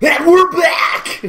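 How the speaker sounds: full-throated, shrill, very high, very loud scream. Taking a second try at the show's comeback line: screamed intro line. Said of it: "My scream is different than yours".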